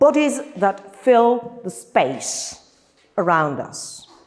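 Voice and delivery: bodies stressed, said slow and drawn out. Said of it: "I deliberately stress this word".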